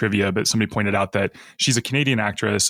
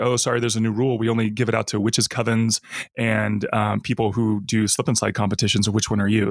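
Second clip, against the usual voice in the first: ordinary talk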